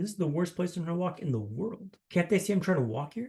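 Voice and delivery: plain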